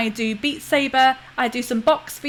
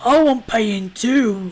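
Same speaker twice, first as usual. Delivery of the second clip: slow, husky troll voice; 2 semitones lower, 4 dB louder than usual. A narrator voices a woman grabbing the listener by the throat, in a husky voice. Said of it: "says in a husky voice".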